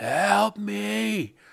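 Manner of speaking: all-out, very high, shrill scream, rough. Retelling a lady screaming in an orchard at night: imitating a woman screaming. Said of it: "she's just full throttle screaming".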